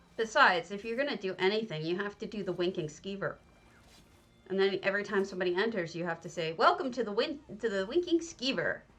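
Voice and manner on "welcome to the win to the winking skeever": annoying, chirpy, high, perky little voice. Describing the greeting said to everyone who enters, mimicking an annoying perky voice. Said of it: "That annoying little perky voice that he has".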